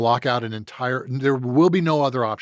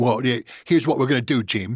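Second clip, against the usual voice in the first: put-on clipped British-accented way of talking. Retelling a talk with a british agent: imitating a british manager's way of talking. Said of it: "he talked like this".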